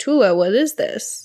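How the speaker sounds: ordinary talk, nothing marked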